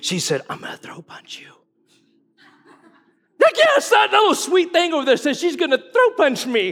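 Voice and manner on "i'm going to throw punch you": put-on mutter under the breath, quieter. Retelling what someone muttered while hearing the verse read: imitating a remark under the breath. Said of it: "under her breath".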